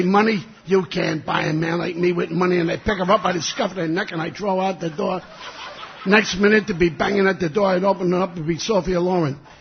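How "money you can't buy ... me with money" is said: ordinary talk, nothing marked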